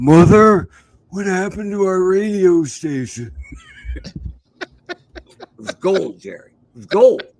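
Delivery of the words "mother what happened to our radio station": loud, put-on elderly man's voice. Recounting a radio station bit he made, doing an old man voice. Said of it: "did old man voice and went".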